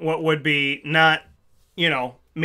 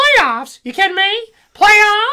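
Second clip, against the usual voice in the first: loud, high-pitched ranting; 7 dB louder than usual. Retelling a coach's press conference rant: Jim Mora impression. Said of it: "And then his is".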